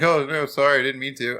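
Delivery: loud, insincere, fake-sorry childlike tone. Retelling how the kid who pitched to him answered: imitating his kid apologizing. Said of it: "He's like".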